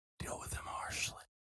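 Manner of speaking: whispering. Speaking in character while shaking a hand: whispering. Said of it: "I whisper".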